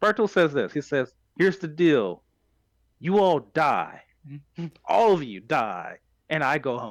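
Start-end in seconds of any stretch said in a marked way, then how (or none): 1.4-6.9 acted, slow, utterly dead-serious tone, no joking. Retelling what Bertolt says to Armin, imitating Bertolt's dead-serious tone. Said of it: "And he was dead serious".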